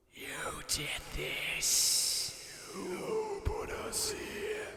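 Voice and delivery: seething, venomous, vicious whispered hiss. Narrating a story, voicing them accusing the narrator: hissing, seething and vicious. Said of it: "They hissed, seething and vicious".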